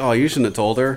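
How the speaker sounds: ordinary talk, nothing marked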